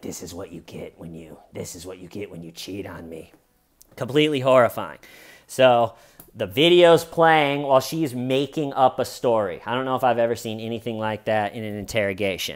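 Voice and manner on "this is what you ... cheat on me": put-on gruff voice, much lower, quieter, slower. Quoting a woman speaking on a video she made; almost a Batman voice. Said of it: "She has like almost a Batman voice".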